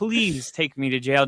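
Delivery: mock desperate pleading tone. Retelling begging a cop to take them to jail: imitating own desperate plea. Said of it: "and I'm desperate".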